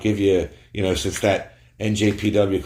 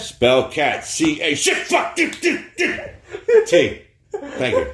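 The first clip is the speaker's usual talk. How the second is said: very high-pitched, very slow, drawn-out character voice; 9 semitones higher than usual. Acting out a spelling bee contestant: Goldust impression. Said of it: "my Goldust impression for people with Tourette's".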